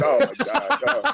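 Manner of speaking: mock weepy, high, very slow, drawn-out sob. Retelling dads leaving daughters at college dorms: imitating crying dads. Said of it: "all these dads walking away from their daughters just crying".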